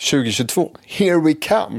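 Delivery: hopeful, expectant, very high-pitched and loud. Podcast hosts redo their intro line after being told to sound expectant, more expectant. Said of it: "Du måste ju låta lite mer så här förväntans".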